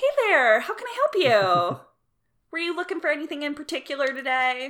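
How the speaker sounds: high retail shop-assistant customer-service voice. Showing the voice the speaker used when working retail: high customer-service voice. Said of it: "it's like a good octave and a half above".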